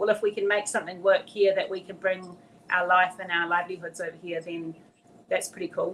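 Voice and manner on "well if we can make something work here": usual speaking voice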